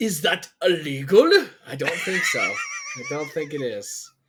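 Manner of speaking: slow, high, drawn-out sing-song, swooping up and down. Joking about a questionable line: Nute Gunray impersonation. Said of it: "my Newt Gunray impersonation".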